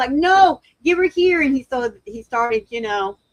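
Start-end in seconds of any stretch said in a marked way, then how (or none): 0.1-1.4 loud, high-pitched screaming. Retelling own words over a sick puppy: retelling own screaming. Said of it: "I was screaming at Wayne".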